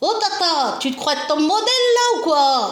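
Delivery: put-on high little-boy voice. Aunt retelling what her little nephew used to tell her, imitating a little nephew's voice. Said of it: "c'est la façon qu'il disait avec sa voix".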